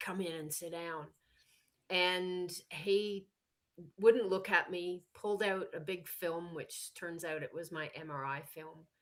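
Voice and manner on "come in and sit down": gruff male voice. Speaker retelling what a man in a bad mood said at his office door, gruff voice. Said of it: "a really gruff voice said".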